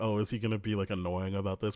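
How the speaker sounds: ordinary delivery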